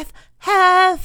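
panting, barely-out word, very high and loud. A narrator reads a character who ran to a friend's house, breathing hard, barely speaking. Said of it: "breathing so hard he could barely speak".

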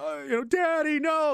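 acted high, drawn-out, tearful begging voice. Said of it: "They're crying".

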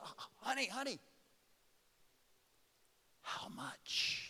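whispered, very quiet and very slow. Retelling what Lisa whispered about the vet bill: imitating a whisper. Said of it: "She whispered to me".

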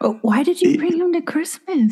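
high, hushed half-whisper. Asking another speaker why he was brought to christmas: half-whispering. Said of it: "Whisper much?".

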